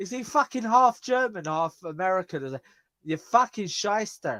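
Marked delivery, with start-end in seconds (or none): 3.0-4.4 slips into an Irish accent. Joking with a co-host about the word shyster, sounding irish. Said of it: "Why do I sound Irish when I say that?".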